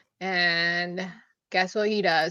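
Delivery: ordinary delivery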